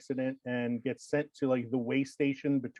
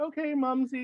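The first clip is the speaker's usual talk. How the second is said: put-on little girl voice, much higher; 12 semitones higher than usual. Retelling a scene where a character's past life is a little girl; little girl voice. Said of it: "he's a little girl with like pigtails".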